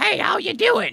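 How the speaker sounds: very high, squeaky, scratchy, creaky goblin voice. Describing their game character, the speaker demos the high-pitched goblin voice first used. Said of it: "the high pitched goblin".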